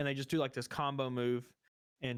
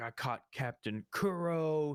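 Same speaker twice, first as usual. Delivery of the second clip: angry, slow, boastful delivery with one word stretched; 2 semitones higher than usual. Retelling a cartoon fight scene: imitating angry Morgan. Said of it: "he's all mad and stuff".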